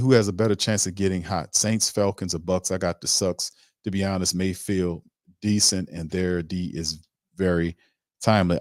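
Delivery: plain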